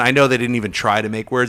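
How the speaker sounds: ordinary talk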